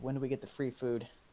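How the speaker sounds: quiet mumble under the breath, half to himself. Voicing a character asking about free food: mumbling under his breath. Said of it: "Soren kinda mumbles under his breath".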